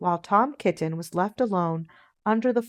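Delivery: ordinary delivery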